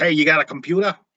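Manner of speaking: New York mobster accent. Speaker says a word sounds like movie gangsters, in stereotypical New York mafia accent. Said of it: "York mafia accent from one of our movies".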